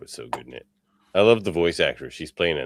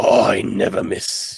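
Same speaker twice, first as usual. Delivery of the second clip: pirate-sounding voice, higher and louder; 6 semitones higher, 7 dB louder than usual. Quoting what a character would say, in a pirate-like put-on voice. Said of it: "is he a pirate?".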